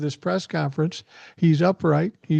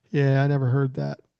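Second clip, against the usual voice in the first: put-on, mock-glum voice; 4 semitones lower than usual. Retell what he said in reply, acting out someone glum. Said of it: "he just kind of glumly said".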